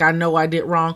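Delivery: ordinary talk, nothing marked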